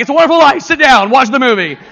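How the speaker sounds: high, loud, barking bossy voice. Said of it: "She's like".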